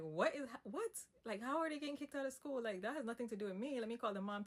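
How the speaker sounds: play-acted flustered panic, high, disbelieving. Retelling hearing the kids were kicked out of school: retelling own past panic. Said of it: "I started to panic again 'cause I'm like".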